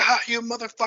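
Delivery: mock enraged, furious scream, pitched way up. Pitching a scene where Barbara grabs a candy cane and beats Ken, Barbara screaming furiously. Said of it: "she's just screaming like".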